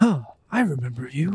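quiet whisper to himself. Voicing a character who sees a goldfish: whispering to himself. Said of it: "kinda whispers to himself".

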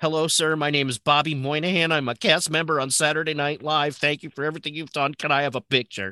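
put-on eager, fifteen-year-old kid manner. Retelling asking a man for a picture at an anniversary event, acting like a 15-year-old. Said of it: "I went up to him like a 15-year-old".

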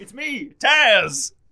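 booming, loud, high voice. Joking about being the commentary team, doing a best Taz impression. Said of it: "I need to do my best Taz".

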